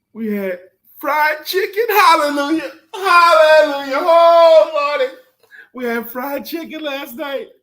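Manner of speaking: very high, loud, slow, ecstatic joyful crying-out.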